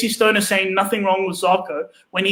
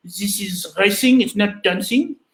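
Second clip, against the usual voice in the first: slow, put-on French accent. Quoting from notes what Zarko said, trying the accent: Zarko's French accent. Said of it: "I'll try to do my French accent".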